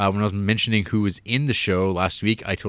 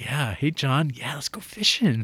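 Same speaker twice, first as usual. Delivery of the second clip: put-on genuine friendly voice, pitched higher; 5 semitones higher than usual. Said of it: "real genuine thing where he's like".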